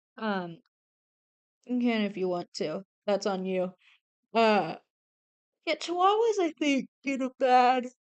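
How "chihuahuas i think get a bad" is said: words warped by a loud, high yawn. Chatting about dog breeds, yawning. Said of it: "I'm sorry, I'm yawning so much".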